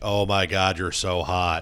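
mock, put-on sarcastic voice. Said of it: "this is her looking at me sarcastically".

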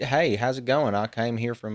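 put-on soft, plain, everyday Southern American accent. Showing another performer how to do a normal Southern voice, Southern accent. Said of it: "Just do normal Southern".

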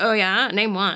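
put-on full valley girl voice, words stretched out. Recapping a scene, quoting Riley's reply: Riley valley girl voice. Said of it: "He talks like a valley girl briefly".

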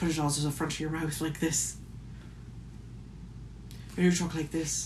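soft put-on Irish accent, placed front of mouth. Speaker who once did a show in Irish dialect shows how: Irish accent. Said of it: "I was in Irish dialect".

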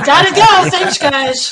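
loud, high, hurried, mock joking voice.

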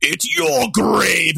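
big, rough, gravelly, rasping cartoon-villain cat voice. Recalling a scene they watched, the speaker quotes Pete: Pete's gravelly voice. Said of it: "like that big evil cat gravelly voice".

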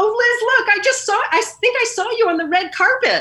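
put-on thrilled, very high, excited exclaiming. Retelling what the mother said, watching the Oscars: imitating her mother excitedly. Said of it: "And she was all excited".

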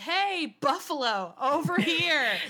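high, loud hollering yell. Recapping an episode where a woman yells at a buffalo: retelling a yell. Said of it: "just starts yelling like".

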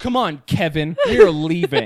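acted, mock-serious tone of voice. Retelling what she says to the man on the saddle, all serious. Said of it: "She's looking at him all serious".

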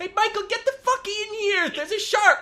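shrill, very loud, high-pitched yell. Acting out a scene, calling a son in from outside: yelling out a window. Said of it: "let me just yell out the window at him".

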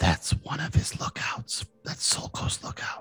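whispered aside. Voicing a character who warns a player about a lookout: whispering in someone's ear. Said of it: "whispers in your ear".

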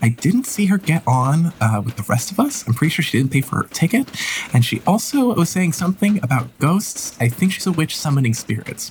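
prim, indignant, high, snooty complaining voice. A passenger flags down the group to report another woman: passenger character voice. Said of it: "the more refined looking Herovian woman tries to flag one of you guys down as you pass by".

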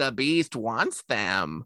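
poorly done put-on witch voice. Describing Tangina's first scene on screen, the speaker quotes her in a failed Tangina impression. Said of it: "I sound more like a witch".

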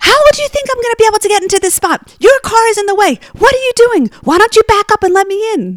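very high-pitched, shrill screaming yell. Retelling a parking-spot dispute, acting out a driver yelling from her car window. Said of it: "She rolls down her window and yells".

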